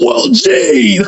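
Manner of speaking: very high, furious, put-on angry screaming. Retelling how Chance, with a bloody mouth, screamed at someone on a panel, retelling screaming. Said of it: "screaming at him".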